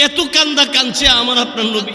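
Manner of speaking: fiery, high-pitched, loud shouting.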